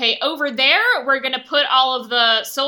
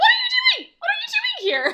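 acted voice jumping an octave, much higher; 4 dB louder than usual. Discussing a show with a co-host, reenacting own reaction to scenes: acting out own voice jumping octave. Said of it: "every time my voice gets, like, an octave higher".

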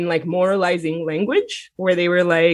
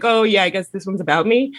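put-on joking delivery. The speaker retells a woman comic's public reply to his tweet, imitating a joking remark. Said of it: "she kind of jokingly was like".

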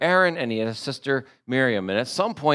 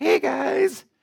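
squeaky, way-up-high voice; 14 semitones higher than usual. Imagining God calling the people out, in a squeaky God voice. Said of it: "if he had a squeaky voice like that".

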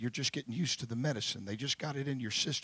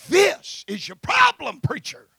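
very loud, very high, panicked shriek; 15 dB louder than usual. Retelling how the doctor ran in with the printout: imitating a panicked scream. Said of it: "she's literally screaming at me and said".

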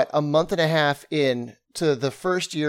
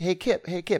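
put-on tiny, small young boy's voice; 3 semitones higher, 4 dB quieter than usual. Telling how a boy kept calling kip from behind him in boston, imitating a little boy's little voice. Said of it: "he hears this little voice".

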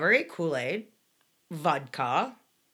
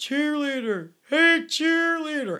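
mock, very high-pitched drunk hollering; 10 semitones higher, 6 dB louder than usual. Retelling her senior year, the speaker is imitating a drunk guy yelling. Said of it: "this drunken guy's yelling out".

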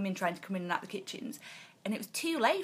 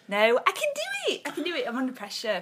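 ordinary delivery

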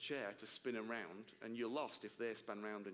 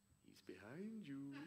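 soft, cheeky, playful teasing voice; 4 semitones higher, 7 dB quieter than usual. Retelling Jesus's reply to the speaker's question, imitating Jesus's cheeky voice. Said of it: "in this cheeky voice".

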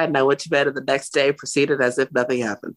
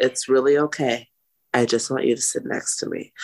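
put-on very calm voice. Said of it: "very calm, collective, no yelling".

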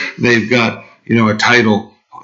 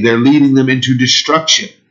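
normal talking voice

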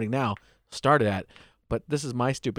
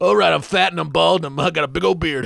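very loud, rough, pitched-up hollering voice; 6 semitones higher, 8 dB louder than usual. Retelling heckling a comedian at a first set: Kyle Kinane voice. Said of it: "just go into my Kyle Kinane voice".

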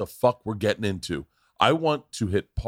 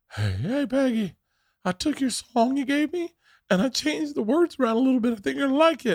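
over-the-top, very high cartoonish character voice. Describing a favorite movie scene, doing a character's cartoonish voice. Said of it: "He talks like this in the whole movie".

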